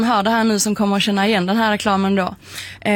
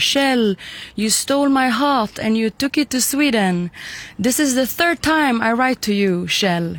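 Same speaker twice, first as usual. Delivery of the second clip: English spoken with a put-on French accent. Retelling a letter a Frenchman wrote, in a French accent. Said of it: "med en fransk brytning då säger liksom så här".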